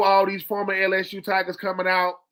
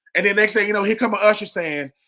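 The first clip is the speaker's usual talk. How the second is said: ordinary delivery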